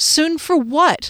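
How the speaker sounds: pressing, challenging, insistent, high-pitched demanding tone. Reading a story aloud, the narrator answers Calvin, demanding. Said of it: "I demanded".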